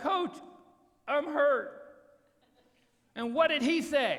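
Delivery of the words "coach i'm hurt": high, hollered, yelled voice. Retelling a reply shouted to the coach from the ground: imitating own past yell. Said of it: "And I yelled back".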